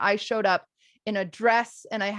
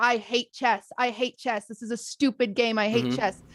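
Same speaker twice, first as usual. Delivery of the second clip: put-on frustrated complaining tone. Retelling own past complaints while losing at chess: retelling a frustrated outburst. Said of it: "because I am frustrated".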